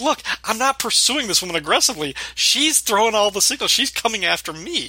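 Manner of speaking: play-acted earnest, high-pitched pleading tone. Retelling a sitcom scene, imitating Sam pleading. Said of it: "plead his case".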